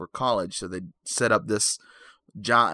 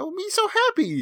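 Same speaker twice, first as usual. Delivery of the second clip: very high, deliberately bad, squeaky creature voice. Telling a horror story, the speaker voices Jar Jar Binks: a terrible impression. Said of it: "That's a terrible Jar Jar impression".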